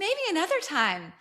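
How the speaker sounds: high, breathy little voice. Speaker recapping a scene as a young man walks off: Harper's high breathy voice. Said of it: "she says in this like high, breathy voice".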